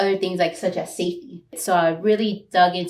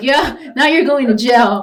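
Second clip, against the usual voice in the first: frightened, alarmed, high, raised cry; 5 semitones higher, 8 dB louder than usual. Retelling an aunt's reaction to a lawsuit: imitating a scared aunt. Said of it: "'cause she's scared".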